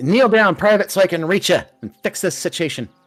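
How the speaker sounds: very high, squeaky little goblin voice. Voicing a little goblin ordering a private to kneel: voicing a little goblin. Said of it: "And she says".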